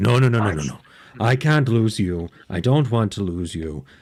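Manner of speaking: plain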